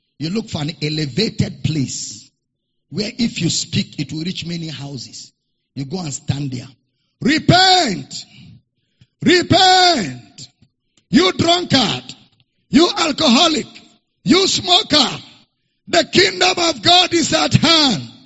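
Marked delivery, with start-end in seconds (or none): 7.2-18.0 play-acted preacher voice, high, drawn-out, megaphone-like call. Recalling the 5 a.m. morning cry, the speaker demonstrates calling out: morning cry through a megaphone. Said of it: "you carry megaphone".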